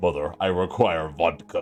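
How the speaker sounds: over-the-top, ridiculously deep masculine voice. Narrator voicing a newborn baby who speaks, in a ridiculously deep manly voice. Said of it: "in a ridiculously deep manly voice".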